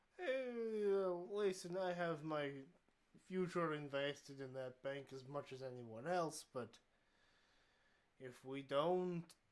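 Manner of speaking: put-on older, old-world Eastern European accent. A game master voices Picolas replying to a player, older man with Eastern European accent. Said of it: "My name is [name]. I'm here with my wife [name]. We have immigrated from the old world. / an older man. / an older man. / The old man says, / I forgot to shape up on my Eastern European accent. / I fo".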